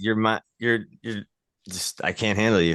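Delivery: completely serious tone. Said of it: "he was so, like, dead serious about it".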